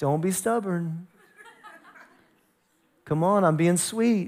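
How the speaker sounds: put-on soft, gentle dad voice as if to a little child. Showing again how a father speaks sweetly to a child: gentle dad-to-little-kid voice. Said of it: "That was my dad to the little kid's voice".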